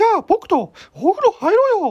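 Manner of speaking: very high, loud, swooping, sing-song cartoon squeak. Parent coaxes a child into the bath, in a Mickey Mouse voice. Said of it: "ミッキーの声を出すようになった… 子供に対して使ってて".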